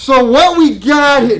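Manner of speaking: deliberate, slow, booming, very loud and very high. The speaker repeats a line slower and louder for a listener to check; slower and louder. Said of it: "Too loud".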